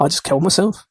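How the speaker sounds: dry, flat, expressionless deadpan voice. Recalling asking a friend whether it is better to exist, retelling a friend's deadpan reply. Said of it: "deadpan as you like".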